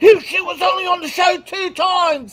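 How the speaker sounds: put-on angry voice. Retelling how angry he got when someone brought up Eliza: imitating someone angry. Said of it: "how angry he was".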